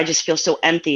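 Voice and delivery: ordinary talk, nothing marked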